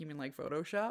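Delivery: muttered under the breath. Retelling a skeptical remark from dad: imitating dad muttering under his breath. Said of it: "under his breath".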